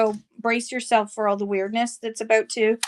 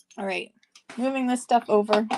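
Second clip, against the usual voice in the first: ordinary talk, nothing marked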